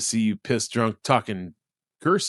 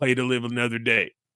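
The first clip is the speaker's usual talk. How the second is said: put-on Cajun accent voice. Describing the Waterboy character, imitating the Waterboy character. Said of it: "the dude in the bib overalls going like".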